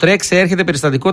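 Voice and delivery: plain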